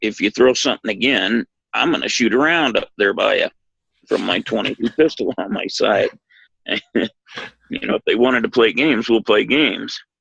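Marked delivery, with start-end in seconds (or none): none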